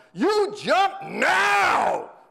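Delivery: very high, commanding, stretched-out yell. Retelling a radio story, the sergeant yells up at a woman: imitating a yell. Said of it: "I yell".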